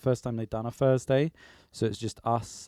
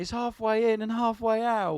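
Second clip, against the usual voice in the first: sudden, very high, shrieking scream; 11 semitones higher than usual. Retelling a story of a crying boy on the toilet: imitating a scream. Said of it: "And he just screamed".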